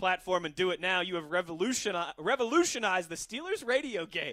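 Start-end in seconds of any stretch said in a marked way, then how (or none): none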